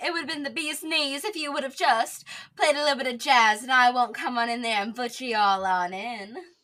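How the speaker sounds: attempted old-timey transatlantic accent. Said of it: "someone who could really do the transatlantic accent".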